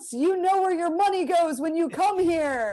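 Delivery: mock yelling. Retelling yelling at people in a hotel lobby: imitating own past yelling. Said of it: "yelling at people in the lobby".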